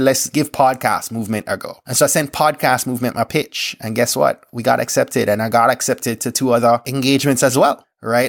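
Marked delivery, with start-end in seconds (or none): none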